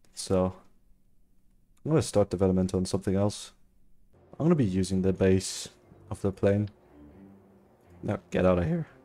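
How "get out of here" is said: voice cracking. Telling someone to get out of here, with a voice crack. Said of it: "voice crack".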